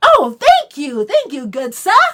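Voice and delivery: sweet, oblivious, polite, sing-song delivery. Acting out the prince Ranveer thanking someone who insults him: Ranveer, oblivious polite prince. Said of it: "Ranveer doesn't get it. He's just like".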